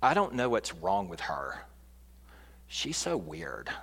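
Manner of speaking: very low, soft put-on teenage girl voice. Giving an example of cruel words about someone, in a teenage girl voice. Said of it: "That's my teenage girl voice".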